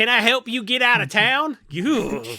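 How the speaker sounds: very loud, slow, vaguely menacing Oklahoma accent. Showing how anything said in an Oklahoma accent comes across: vaguely threatening Oklahoma accent. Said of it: "say anything with an Oklahoma accent. It sounds vaguely threatening".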